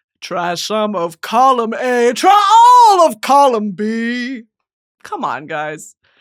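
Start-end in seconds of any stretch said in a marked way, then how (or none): 0.2-4.4 genie character voice. Doing lines of the genie: Robin Williams impression. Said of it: "me doing a Robin Williams impression".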